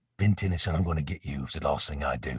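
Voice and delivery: cool, calm blended South African and Australian accent. Showing a favorite character's line to the interviewer, Khyber's South African-Aussie accent. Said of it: "kind of an Aussie hybrid thing".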